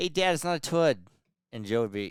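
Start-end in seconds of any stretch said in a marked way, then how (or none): 0.0-1.0 put-on Boston accent, higher. Retelling how a child talked: imitating a Boston accent. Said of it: "talk like a Bo-, Boston accent".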